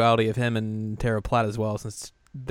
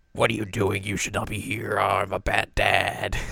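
mock fatherly villain voice; 2 semitones lower than usual. Joking about calling Keith Silverstein and acting out his reply; Keith Silverstein bad-dad impression. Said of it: "You got to call Bad Dad Keith Silverstein up".

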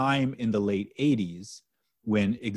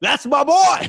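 very high, loud, dopey goofy yelling voice; 11 dB louder than usual. Describing an imagined movie supercut, the speaker uses Adam Sandler's stupid voice. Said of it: "it's like Adam Sandler's stupid voice".

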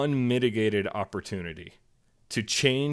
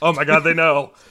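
put-on very loud, high-pitched, paranoid, stoned-sounding blurt; 5 semitones higher, 11 dB louder than usual. Imitating a public figure's cadence at hearings: imitating someone high trying not to get caught. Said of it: "he talks with the cadence of somebody who's high in public and is trying not to get caught".

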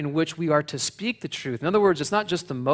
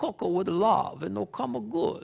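put-on soft, creaky old-country Italian accent, elderly woman voice; 5 semitones higher, 6 dB quieter than usual. Quoting the speaker's grandmother from Benevento, Italy, imitating Concetta. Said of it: "Is that a good imitation?".

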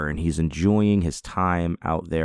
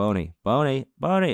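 high, mock calling-out yell; 8 semitones higher than usual. Retelling how the dog bolted after deer, the speaker is retelling yelling for the dog. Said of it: "and I'm yelling".

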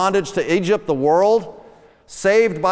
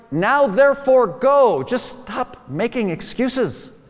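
mock exasperated, impatient, fed-up tone; 4 semitones higher than usual. Retelling the Lord urging Moses to go: imitating the Lord losing patience. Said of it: "you can sense the Lord is losing his patience".

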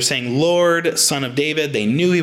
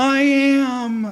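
mock pitiful whimper, very high, drawn out; 12 semitones higher than usual. Retelling how a guy answered her shout, imitating a pitiful reply. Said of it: "I hear this pitiful reply".

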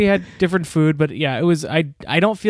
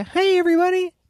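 very high-pitched cartoon dog voice; 13 semitones higher than usual. Debating how Scotty should sound, the speaker does Scotty's voice. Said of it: "when me and my wife do his voice".

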